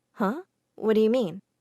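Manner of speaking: ordinary talk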